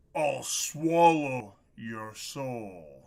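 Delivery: deep, demonic underworld voice. Mic is glitching and the speaker plays along with a demon voice. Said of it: "Demon voice is bad".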